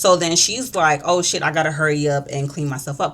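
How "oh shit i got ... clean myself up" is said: ordinary delivery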